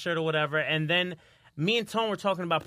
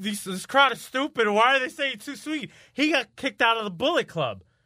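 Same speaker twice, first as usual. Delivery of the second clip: put-on aggressive child voice, much higher pitch; 5 semitones higher, 4 dB louder than usual. Retelling a wrestling show, a kid in the crowd complains: mock-aggressive voice. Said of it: "with a very aggressive".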